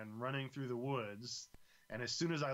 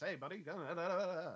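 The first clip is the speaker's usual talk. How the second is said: put-on high, old-timey 1950s-style man's chatter; 5 semitones higher than usual. Imitating how a game character from the fifties talks: imitating an old-timey 1950s guy. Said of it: "he talks like this".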